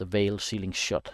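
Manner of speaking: ordinary delivery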